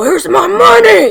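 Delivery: very loud, hoarse, raspy cowboy voice. Speaker tries out a cowboy's line to edit in later, raspy cowboy voice. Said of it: "Did that sound like a cowboy in any way? It's very raspy".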